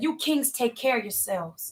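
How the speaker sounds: plain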